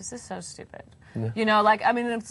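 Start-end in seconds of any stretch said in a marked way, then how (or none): 0.0-0.8 put-on whispered, snooty, sneering Valley Girl voice. Recalling first hearing about Natal, mocking it in a snotty Valley Girl voice. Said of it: "Did you use that voice?".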